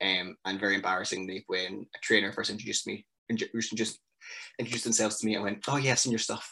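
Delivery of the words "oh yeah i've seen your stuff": mock, trying hard to sound cool and in the know. Retelling meeting a trainer, imitating trying to sound cool. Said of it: "Trying to sound like a cool insider".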